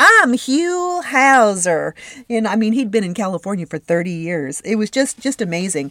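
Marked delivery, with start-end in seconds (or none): 0.0-1.9 high, loud, slow Tennessee drawl. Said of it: "he never lost that beautiful Tennessee accent".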